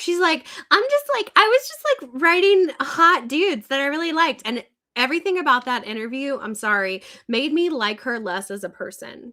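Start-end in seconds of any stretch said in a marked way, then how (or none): 0.7-4.4 mocking Valley girl, high, loud, sing-song. Retelling an author's interview answer, imitating a Valley girl voice. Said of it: "she talked like a Valley girl".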